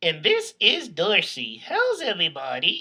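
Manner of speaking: voice of a ventriloquist's dummy. Introducing the ventriloquist puppet to the audience: Dorsey puppet voice. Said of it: "I am a ventriloquist".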